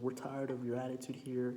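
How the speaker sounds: ordinary talk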